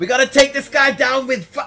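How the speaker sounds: yelling in a character voice. Voicing a fighter who calls for fire attacks mid-battle: Dernan yelling. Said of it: "you hear Dernan yelling".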